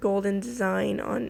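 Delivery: ordinary delivery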